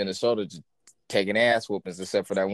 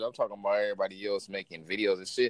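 ordinary talk, nothing marked

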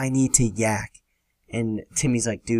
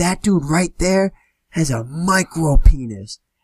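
acted, sloppy, high, drawn-out drunken holler; 5 semitones higher, 4 dB louder than usual. Retelling what a drunk man yelled at a house party, retelling a drunk yell. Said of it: "he points to this dude and he yells".

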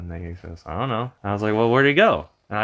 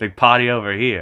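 normal talking voice

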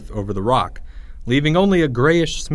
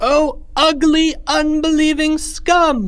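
very high, very slow, drawn-out outcry; 4 dB louder than usual. Narrator reads the high priest's reply to a doubter, crying out. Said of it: "cried the High Priest".

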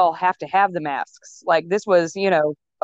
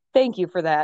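mock talking while laughing. Retelling what the officiant said after the vows: imitating someone laughing while talking. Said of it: "he was laughing so hard, and he goes".

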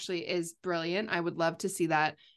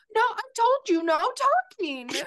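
put-on very high, sulky, petulant toddler whine; 6 dB louder than usual. Mocking a man who demanded no talking during the break, imitating Leon as petulant toddler. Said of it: "He sounded like a petulant toddler".

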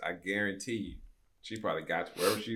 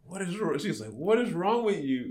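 laughing delivery, pitched higher; 9 semitones higher than usual. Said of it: "she's, like, laughing".

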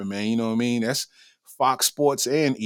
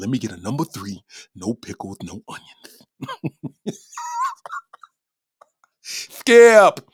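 loud, slow delivery with swooping, swinging pitch; 5 dB louder than usual. Ordering a number three with no pickles, in the Shannon Sharpe voice. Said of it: "You gotta say unorthodox shit in the Shannon Sharp voice".

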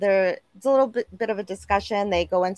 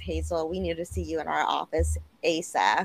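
normal talking voice

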